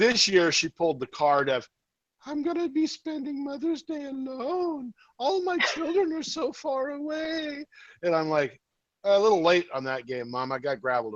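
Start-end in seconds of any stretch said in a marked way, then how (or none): 2.3-7.6 very high-pitched, pitiful, guilt-tripping mother voice. The speaker quotes what his mom said about Mother's Day: imitating his mom. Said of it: "Pat's mother impression".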